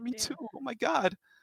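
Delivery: very high, drawn-out, slow, emotional talking-horse voice. Voicing a talking horse welcoming back an old friend: emotional. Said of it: "he gets kind of emotional".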